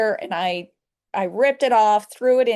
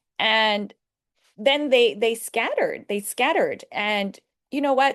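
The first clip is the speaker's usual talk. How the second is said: ordinary talk, nothing marked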